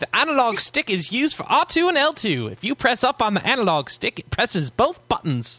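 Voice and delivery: bad, exaggerated put-on British accent, very high. Answering Kazrico's second letter about the analog stick in a terrible British accent. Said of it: "do my terrible British accent and say".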